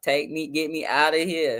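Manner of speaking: put-on tearful voice. Recalling being locked in the holding cells: mock crying plea. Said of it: "I punk down when it's time to go to jail".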